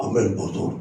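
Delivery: bashful, hoarse, mannish, breathy whispered murmur. Retelling how a church sister answered the pastor: imitating a hoarse, strong, mannish voice. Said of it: "Porque la voz era así, ronca, fuerte, de hombre".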